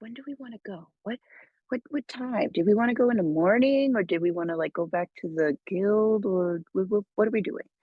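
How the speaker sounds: put-on secret whisper. Huddling with the group in character, asking when to leave: secret whisper in character. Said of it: "just secretly whispering".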